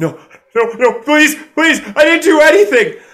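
very high, very loud, terrified, stammered pleading. Game master voicing a student who backs away from you, stammering. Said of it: "as they begin to stammer".

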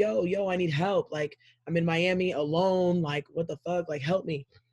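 play-acted slow yelling, words drawn out. Alone in Miami, speaker retells calling to people outside for help, re-enacting own screaming. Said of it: "So I'm screaming".

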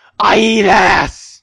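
very loud, high, brash, crude blaring shout. Joking with friends in a game: Filthy Frank impression. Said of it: "Let me do my best Filthy Frank impression".

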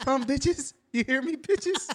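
put-on squeaky, very high, girly woman voice. The speaker quotes a man reading the girls' part, in his put-on woman voice. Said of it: "in his woman voice".

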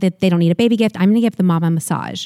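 usual speaking voice

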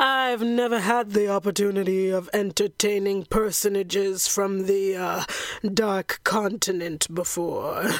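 deep, bass-heavy vampire voice. Recapping a movie, performing the host's welcome line in a Dracula voice. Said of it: "He welcomes his guests with this doozy of a line. / He welcomes his guests with this doozy of a line. / [name], is entertaining. He welcomes his guests with this doozy of a line. / I felt bass".

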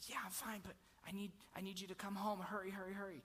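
soft, hushed, urgent, scared pleading tone.

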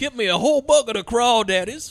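put-on Southern accent. Joining in imitating a film character's awful Southern accent as Thurman Parks. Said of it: "has this awful Southern accent".

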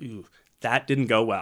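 ordinary delivery

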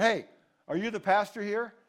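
mock agitated loud tone. Retelling how a man stopped him in the lobby: imitating an upset-sounding tone. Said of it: "spoke in kind of a tone".

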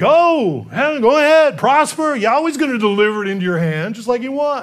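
a little sarcastic, knowing tone. Imagining how the prophet answered the king: sarcastic Micaiah voice. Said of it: "maybe a little sarcastically".

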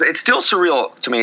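voice cracking and breaking up. Talking about the team reaching the World Series: voice cracking. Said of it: "Oh, my voice cracked".

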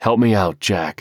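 earnest, begging, pleading tone. Homer asks Jack to keep quiet about the alligator chase; pleading. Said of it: "he pleaded".

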